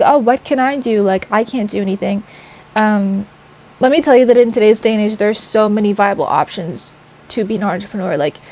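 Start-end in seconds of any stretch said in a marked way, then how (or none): none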